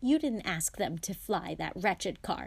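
ordinary delivery

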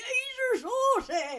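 put-on very high, Irish-accented shouting yell. Recalling a movie scene where a man wakes from a coma yelling: retold yell in Irish accent. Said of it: "that accent was very Irish".

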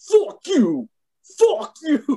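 very high, swooping, drawn-out taunting yell. Retelling a wrestler's heel turn on top of Okada: imitating Will Ospreay shouting. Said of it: "Will Ospreay gets on top of him and he's like".

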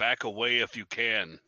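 loud, slow, drawn-out bellow. Yelling at a creature in the game to back away: yelling in character. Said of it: "I'm gonna yell at him".

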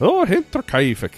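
Irish-sounding accent. Attempting a German murder case name, coming out in an Irish accent. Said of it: "that was Irish".

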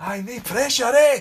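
very loud, high, shrill, jeering, mocking shout. Recalling calling out after a penalty was scored, retelling a shout over. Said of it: "I just shouted over".

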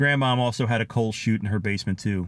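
ordinary delivery

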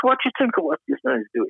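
very high, animated, swooping put-on Irish accent. Retelling the question an Irishman asked, in an Irish accent. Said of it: "I'm using an Irish accent".

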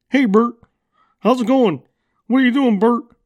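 very high, loud puppet character voice. Speaker demonstrates voices from childhood puppet shows, Ernie impression. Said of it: "i used to you know imitate like uh, bert and ernie".

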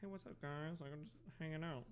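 talking out of mouth's side. Showing off a new way of talking, talking out of the side of the mouth. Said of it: "But just like part of my mouth".

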